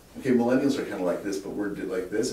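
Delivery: normal talking voice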